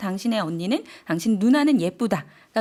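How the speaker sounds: ordinary delivery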